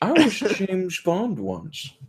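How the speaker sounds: put-on voice, high, lilting and swooping. Doing an effeminate Sean Connery voice. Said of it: "some Sean on Sean action".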